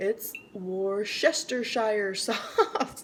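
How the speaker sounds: slow, laughing stumble over the word Worcestershire.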